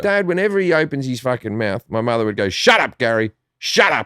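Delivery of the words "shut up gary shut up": mock-berating snap, much slower. Describing how his mother berated his dad, imitating her snapping. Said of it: "Like that, right?".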